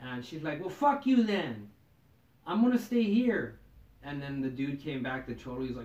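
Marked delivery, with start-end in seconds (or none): 0.6-3.6 put-on drunken yelling in a woman's voice. Retelling a fight at a tattoo expo: imitating a drunk woman yelling. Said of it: "this chick was yelling 'cause, like, she was drunk".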